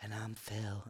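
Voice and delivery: awkward, very quiet, barely-there half-whisper. Retelling how a co-host introduced himself: imitating a half-whisper. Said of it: "He just whispered".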